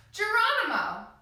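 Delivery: shout starting high and sliding top to bottom. Showing a pretend jump from an airplane: falling shout from high to low. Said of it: "we're gonna shout from the very top all the way to the bottom".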